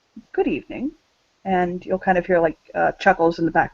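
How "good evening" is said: calm, level, soft, steady disguised voice. Voicing a masked figure on a video greeting viewers: calmest, most level voice-altered voice. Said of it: "in the calmest, most level, but voice-altered voice".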